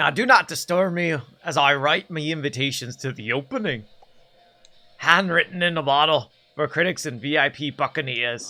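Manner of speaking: voice of a grand pirate captain. Speaker recording voice lines as a voice actor, Captain Hook voice. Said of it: "let me do like two voice lines".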